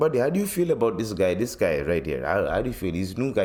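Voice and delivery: put-on Indian accent. Telling a story about his Indian chef, the speaker quotes him in an Indian accent. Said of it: "There's a reason why I'm doing the accent".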